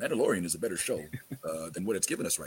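very low voice peppered with uhs. Doing an impression of Tyrone on request: imitating Tyrone. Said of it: "could you do the impression?".

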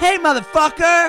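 put-on cocky voice. Acting out Quinn bumping someone on an open mic list: imitating cocky Quinn. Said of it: "Cocky Quinn".

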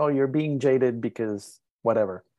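ordinary delivery

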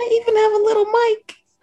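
small tiny voice. Describing a snow globe in progress: small voice. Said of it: "I made my voice small when I said that".

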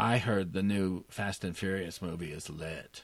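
soft, creaky, detached, disinterested vocal fry. Describing a movie scene, voicing a girl on her cell phone talking to her friend with mock detached vocal fry. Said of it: "this vocal fry, detached girl".

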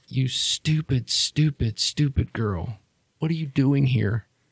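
tearful, crying, scolding tone. A woman pulls you in for a hug and starts to cry; crying while scolding. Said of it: "She steps up to you, grabs you, and then just pulls you in for a hug. And she starts to cry. [name] wraps her arms around her waist and like cries into her shoulder. She says, / Mom, it's [name]".

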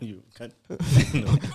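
laughing, words broken up by laughter. Asked why he's laughing while they discuss a driver's fire, laughing while talking. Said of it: "Why are you laughing?".

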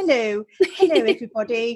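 posh upper-class English accent. UK guest greets everybody on the show, talking posh like the Queen. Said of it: "Should I talk posh like the Queen?".

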